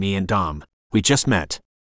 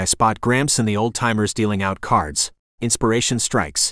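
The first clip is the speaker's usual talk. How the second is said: ordinary delivery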